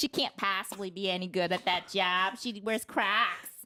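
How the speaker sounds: put-on Boston accent on every word. Playing along in a bit about coworkers, speaker talks in a Boston accent. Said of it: "I think that's Boston".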